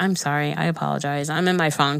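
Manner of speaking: normal talking voice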